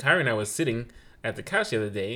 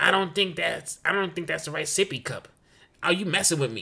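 put-on child's attempted New York accent, much higher pitch; 6 semitones higher than usual. Speaker imitates a five-year-old practicing their new york accent, a child's attempted new york accent. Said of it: "she's trying to mimic our New York accent".

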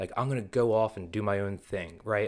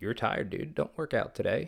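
small, little negative inner voice; 3 semitones higher than usual. Acting out the inner voice talking someone out of working out: little negative voice. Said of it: "That little bitch voice is gonna be like".

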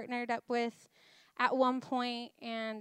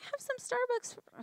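very high-pitched put-on voice; 13 semitones higher than usual. Retelling what her husband said while she helped: high-voiced Benji impression. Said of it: "that was a really high voice for you".

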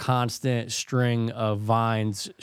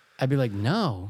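normal talking voice

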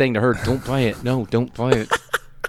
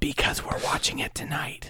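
low, hushed, breathy whisper; 4 semitones higher, 7 dB quieter than usual. Retelling the wife's words in a story, whispering while imitating wife. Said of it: "You don't have to keep whispering when you do her part".

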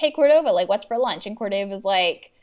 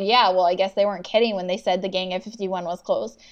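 ordinary delivery

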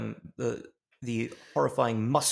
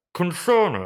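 muffled voice through a wall, higher and louder; 6 semitones higher, 8 dB louder than usual. Imagining a voice heard from inside a wall: muffled Elon Musk from inside a wall. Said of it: "imagine hearing muffled coming from a wall".

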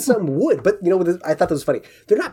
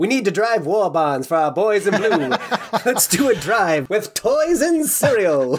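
put-on mid-Atlantic transatlantic accent. Podcast host slipping into a bit during the episode; transatlantic accent. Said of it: "What's that accent? Transatlantic?".

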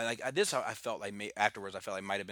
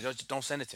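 usual speaking voice

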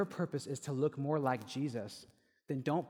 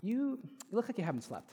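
mock-tender voice, higher and quieter; 8 semitones higher than usual. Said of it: "you said it so kindly and so tenderly".

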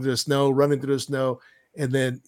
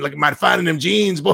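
loud, rough-edged put-on voice pushed out; 2 semitones higher, 5 dB louder than usual. Showing the Eddie Murphy impression the other one got mixed with: Eddie Murphy impression. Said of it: "the Eddie Murphy one where he's like".

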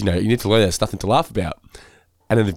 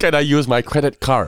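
put-on American accent, higher; 5 semitones higher than usual. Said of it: "the imitations of Americans".

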